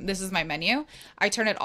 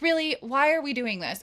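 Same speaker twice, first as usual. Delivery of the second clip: pitched-up, irritated, annoyed tone; 6 semitones higher than usual. Retelling a reply to a son who talks back: imitating own irritated tone. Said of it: "tone in my voice where I'm like".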